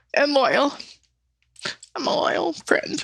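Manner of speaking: crying while talking. Describing how to be remembered to another speaker: crying while talking. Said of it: "I keep crying".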